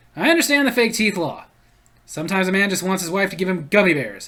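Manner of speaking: plain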